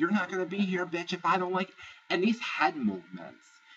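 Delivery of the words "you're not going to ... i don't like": screaming, pitched very high. Retelling a reality-show fight from a bench: imitating someone screaming. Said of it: "Lauren starts screaming at her".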